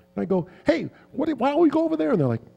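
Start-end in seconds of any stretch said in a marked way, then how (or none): 0.6-2.1 play-acted, very high pitched yelling. Retelling arriving on a quiet set, imitating own past yelling. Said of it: "And I'm yelling and screaming".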